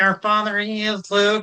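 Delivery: high-pitched frog-like puppet voice. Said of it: "That's the Yermit".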